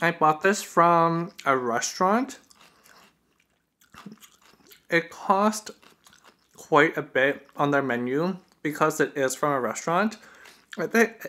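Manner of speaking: speaking while chewing, mouth full. Describing a restaurant dish while eating it; talking while chewing. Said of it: "chewing and talking at the same time".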